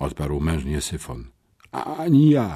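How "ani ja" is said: high, strangled words choked through tight throat. Replying while questioned at the police, choked out through a tight throat. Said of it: "wykrztusiłem przez ściśnięte gardło".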